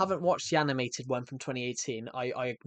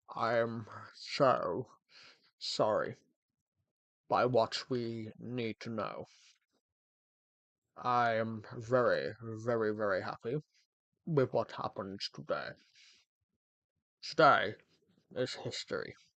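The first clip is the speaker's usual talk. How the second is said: put-on very deep voice; 2 semitones lower, 4 dB quieter than usual. Imitating someone known who had a really deep voice: imitating a guy's really deep voice. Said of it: "I know a guy that his voice was like this".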